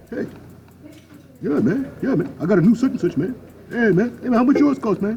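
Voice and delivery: very high goofy goober voice. Mocking how simple-minded people talk; goofy goober voice. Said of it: "it's the goofy goober voice".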